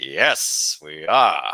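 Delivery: silky smooth, easy delivery, smooth as butter. Retelling meeting Billy D and his reply: smooth voice imitating Billy Dee Williams. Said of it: "Like, in a smooth voice".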